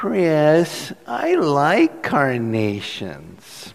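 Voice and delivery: whiny, apologetic voice with sing-song swoops. After five minutes of silence, mom finally answers Chris, imitating Mary's whiny apology. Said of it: "in a whiny, kind of apologetic voice".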